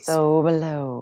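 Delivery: mystical, magical spell-casting incantation tone. Guiding a card ritual, the speaker says the phrase in a magical voice. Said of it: "in your best magical voice".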